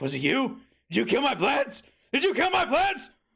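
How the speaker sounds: very high scream with cracking voice. Retelling what they shouted at people walking into the room, voice cracking. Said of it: "My voice is cracking really hard".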